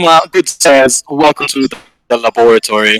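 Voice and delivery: high, very proper, formal butler voice. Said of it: "like, proper voice about himself".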